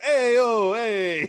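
loud, high Italian character voice. Retelling what a role-play Italian character says: Hassan Piker's Italian character voice. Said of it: "he goes".

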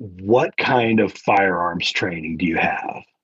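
condescending, patronizing, talking-down tone. Retelling asking Fred what gun to buy, condescending Fred impression. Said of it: "in the most condescending way possible".

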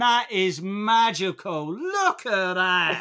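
put-on child's voice with Cockney accent. Retelling what a young girl said about the snow, in a little Cockney adult voice. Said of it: "like a little Cockney adult".

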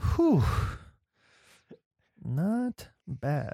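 audible sigh out before speaking. Showing how to deliver a pickup line: exhale before the line. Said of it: "you gotta exhale first".

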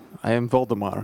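put-on Russian accent. Voicing a wereraven character meeting the party: Russian accent. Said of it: "You sound just like him".

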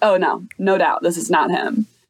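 ordinary talk

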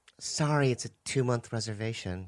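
clipped, polite hostess tone. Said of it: "And she goes".

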